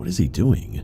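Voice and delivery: acted-out bewildered, confused tone, high pitch. Retelling what the dad said while driving past an agitated man, mock-confused. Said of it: "in a sort of confused voice".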